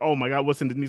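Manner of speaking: ordinary talk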